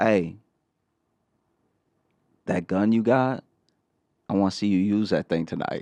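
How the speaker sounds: acted-out whisper. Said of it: "and I whisper to him".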